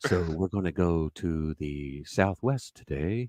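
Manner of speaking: very low, unhurried, slow radio announcer voice. Mocking another speaker's loud voice: NPR announcer voice. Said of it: "Now he's talking like an N P R guy".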